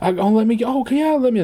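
flustered, gushing, high and breathless.

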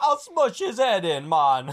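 put-on Jamaican accent, loud and slow. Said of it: "like the fucking Jamaican fucking drug dealer".

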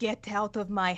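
hushed whispered delivery. A player adds flair to a spell by voicing its effect: whispering. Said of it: "the whisper is".

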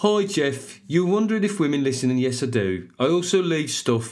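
put-on Birmingham, Brummie accent. Speaker reading out a woman's message addressed to him, Brummie accent. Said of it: "So obviously it's going to be a Brummie accent".

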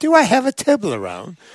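put-on British accent, lightly done, casual. You retell what Serena came and asked you, imitating Serena's British accent. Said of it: "in her British accent".

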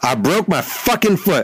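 high-pitched, barked-out words. Clark, questioned by the media after the game about his foot, answers the narrator, barked. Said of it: "he barked".

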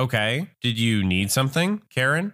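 ordinary delivery, nothing marked

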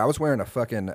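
normal talking voice

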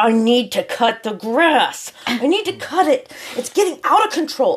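put-on upset, worked-up, high-pitched fretting, rising. Telling how rain stopped him mowing the lawn, imitating him all upset. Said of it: "he's all upset and he's".

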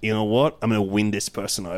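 ordinary talk

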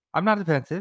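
very high, jokey, playfully defensive tone. Denying being defensive to the other speaker: mock defensive tone. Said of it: "You have a defensive tone right now".

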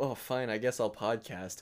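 normal talking voice

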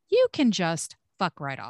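ordinary talk

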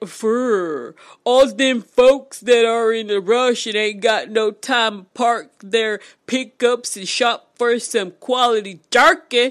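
loud, goofy, ridiculous voice, "fur" drawn out. Improvising what the jerky store owner was thinking, in a ridiculous put-on voice. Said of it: "A ridiculous voice said".

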